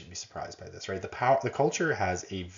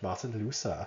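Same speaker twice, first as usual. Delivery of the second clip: best-effort put-on German accent; 4 dB quieter than usual. Discussing Protestant values, saying a name, in a German accent. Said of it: "That's my best German accent".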